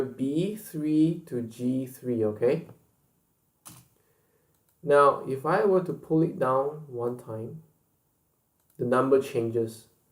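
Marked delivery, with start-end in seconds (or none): 0.0-2.2 slow, stressed pitch fall from B3 to G3. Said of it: "And note here".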